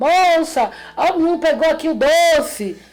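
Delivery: imitated shouting. Retelling what people in the street called out: imitating people shouting. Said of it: "o povo gritava".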